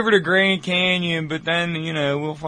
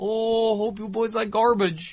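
put-on, high, soft Midwestern Ohio accent; 5 semitones higher, 5 dB quieter than usual. Asked what her accent was like, imitating a woman in an Ohio accent. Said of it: "It was like it was an Ohio accent".

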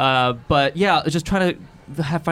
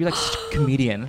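normal talking voice

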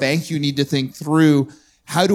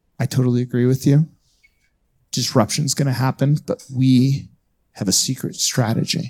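conspiratorial, secretive, hushed whisper; 2 semitones lower than usual. Retelling what a man said after a talk: imitating someone whispering. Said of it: "why are we whispering?".

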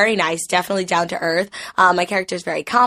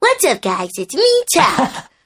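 high, swooping, bouncy sing-song cartoon voice; 6 semitones higher than usual. Revealing a childhood voice role on a Nick Jr. show, showing it still works: Turtle Tuck voice. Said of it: "I can still do it".

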